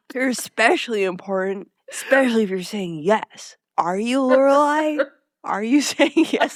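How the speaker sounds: voice of a weird bro. Retelling a scene from a show, voicing Max as a weird bro. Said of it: "This weird bro".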